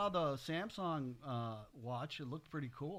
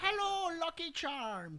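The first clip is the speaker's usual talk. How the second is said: terrible Irish brogue, very high; 13 semitones higher than usual. Doing a bit about calling an Irish brother-in-law while the other speaker objects: bad Irish accent. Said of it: "that's the worst Irish accent I've ever heard".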